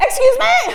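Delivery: loud high-pitched shout.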